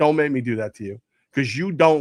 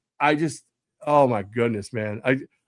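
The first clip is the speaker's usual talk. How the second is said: normal talking voice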